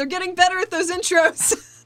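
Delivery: loud yelling. Voicing a character yelling to Tuca during the fight intros: yelling. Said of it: "She yells at Tuca".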